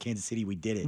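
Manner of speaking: ordinary delivery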